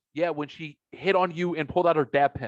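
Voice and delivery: ordinary talk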